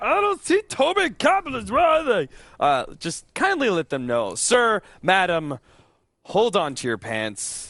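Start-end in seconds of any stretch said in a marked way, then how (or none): 0.0-2.3 very high-pitched character voice. Caster explaining how to answer viewers asking in the chat, imitating chat viewers. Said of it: "my impression of the people who come in and chat".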